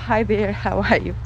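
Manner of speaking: ordinary delivery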